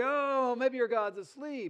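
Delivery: confident, slow, drawn-out, high-pitched mocking taunt. Retelling a scripture story where rivals are mocked: imitating a mocking taunt. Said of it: "Elijah started mocking them".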